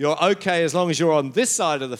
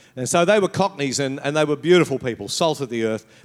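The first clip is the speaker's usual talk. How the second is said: ordinary talk, nothing marked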